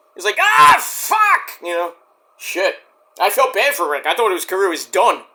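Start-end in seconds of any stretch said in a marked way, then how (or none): 0.4-1.6 very high-pitched, loud scream of pain. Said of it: "He was screaming".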